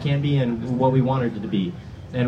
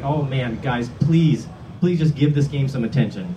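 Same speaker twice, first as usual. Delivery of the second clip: mock begging and pleading. Recalling 2007 and 2009, the speaker acts out his past self begging and pleading. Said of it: "just begging and pleading".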